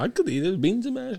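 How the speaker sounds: very high, shrill vampire voice. Bantering with another speaker, putting on a Dracula accent. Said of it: "you were Dracula on a motherfucker".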